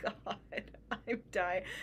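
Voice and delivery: hushed, breathy whisper through tears of laughter. Reacting to an interview, the speaker breaks down cry laughing. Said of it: "I was cry laughing".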